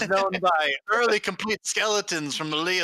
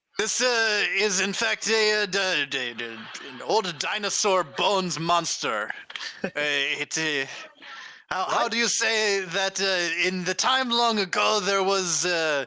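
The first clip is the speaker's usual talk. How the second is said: put-on sloppy drunken slur, tripping over words. Asked to give it in character, a player speaks as Father Gregory, drunk voice. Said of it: "Father Gregory is perpetually drunk".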